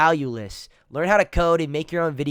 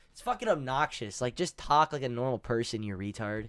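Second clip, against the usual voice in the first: ordinary talk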